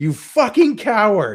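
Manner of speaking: very high, very loud, shrill, furious scream. Retelling screaming at a player in the middle of a bar: retelling a scream. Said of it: "I just screamed out in the middle of the bar".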